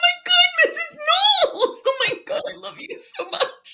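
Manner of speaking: very high, very loud, shrill gushing freak-out. Retelling meeting a former teacher in a store, imitating herself freaking out. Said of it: "I freak out. I'm like".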